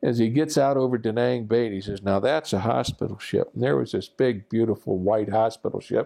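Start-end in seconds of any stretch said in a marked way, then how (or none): 2.0-3.5 put-on smug voice. Retelling the instructor showing the right ship: imitating someone grinning smugly. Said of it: "that shit-eating grin on his face".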